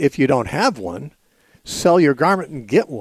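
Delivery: ordinary delivery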